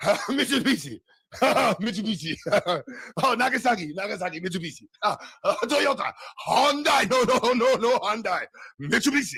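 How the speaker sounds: angry, high-pitched put-on Japanese accent. Recalling someone's voice bits, the speaker shouts brand names in an angry fake japanese accent. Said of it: "and that's the Japanese accent".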